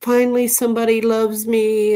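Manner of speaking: high, tearful voice, speaking through tears. Retelling what a guy said when a dog picked him: imitating someone crying. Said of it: "he just burst into tears".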